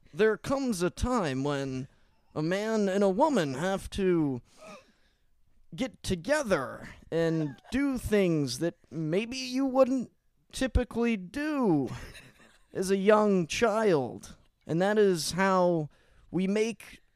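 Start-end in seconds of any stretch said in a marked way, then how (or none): 0.2-14.3 fatherly man-to-man voice. Acting out how he would give his son the birds-and-the-bees talk, imitating him. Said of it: "I will try my best to at least like talk like he would".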